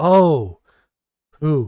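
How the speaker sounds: confused, puzzled. Voicing a character who stares at another: confused. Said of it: "Just confused".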